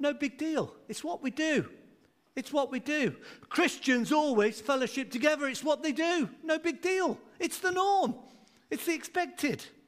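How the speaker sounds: high, breezy, casual no-big-deal tone.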